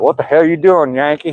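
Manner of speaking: put-on Southern accent. Explaining how locals treat Northerners, mimicking a local in a Southern accent. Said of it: "as long as you got a Southern accent".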